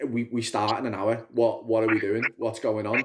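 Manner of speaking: ordinary talk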